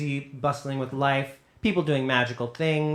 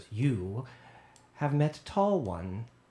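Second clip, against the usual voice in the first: slow gnome woman character voice; 4 dB quieter than usual. Voicing a gnome woman in a witch hat who stops a player: gnome woman voice. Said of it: "she goes".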